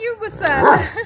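put-on high-pitched, cooing baby talk, like pet talk.

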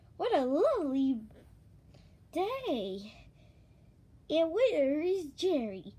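plain reading voice

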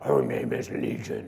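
rough, creaky demon voice. Imagining a demon answering Jesus's question: movie demon-possession voice. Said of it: "that movie kind of rendition of demon possession".

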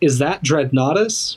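tired voice faking a little excitement. Quoting a movie line by Doctor Grant: imitating Sam Neill's tired, half-excited line. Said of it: "he sounds a little excited, but he can't really fake".

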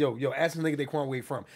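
plain

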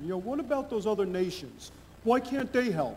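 slight touch of New York accent. A speaker from New York poses a question to the audience, with a slight New York accent. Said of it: "so I'll say it with a little New York accent".

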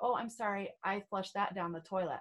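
ordinary delivery

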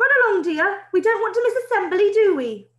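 very high, loud, encouraging calling out. A headmaster calls to a pupil going past on the school path, calling out encouragingly. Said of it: "the headmaster called out encouragingly".

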